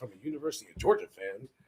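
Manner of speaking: mock hushed, soft delivery with showy pizzazz. Repeating another speaker's words, imitating a line said with pizzazz. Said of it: "You said that with some pizzazz, like".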